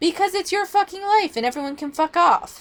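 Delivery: high, strained voice giving out. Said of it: "my voice is starting to go".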